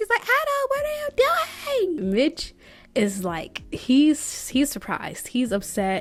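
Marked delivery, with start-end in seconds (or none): 0.2-2.1 play-acted, very high-pitched, shrieking scream. Retelling a party game, acting out Blair screaming at Adam, retelling a scream. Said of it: "And Blair is screaming".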